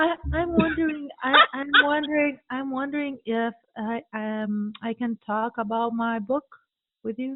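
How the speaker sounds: unsure, hesitant, halting, not expert-sounding voice. Demonstrating how not to ask a podcast host to discuss your book, sounding unsure. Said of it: "You don't sound expert".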